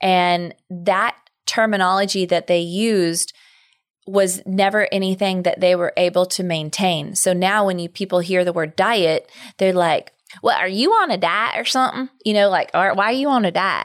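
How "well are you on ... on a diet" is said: acted rural country accent. Quoting what people say about diets, in a put-on country accent. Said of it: "Why do you go country?".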